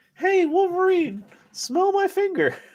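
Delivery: very high, animated, swooping, sing-song cartoon hero voice. Riffing on an old joke, giving Cyclops a line to Wolverine: Cyclops voice. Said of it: "That's why I'm doing the voice".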